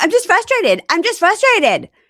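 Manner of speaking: very high, loud, swooping, sing-song woman's voice. Retelling how he imitated her in the car: retelling an imitation of her. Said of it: "he's imitating her, going".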